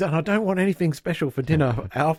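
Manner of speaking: play-acted, loud, high, pointed, projected for all to hear. Retelling a sitcom scene, Willie announces it so Kate hears, loudly. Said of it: "he loudly goes".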